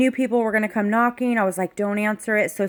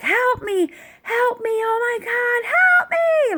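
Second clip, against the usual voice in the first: mock very high, drawn-out, top-of-the-lungs shrieking; 14 semitones higher than usual. Retelling a panicked night outside: imitating a scream for help. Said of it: "started screaming".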